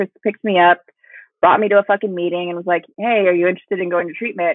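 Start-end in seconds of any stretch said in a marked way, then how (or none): none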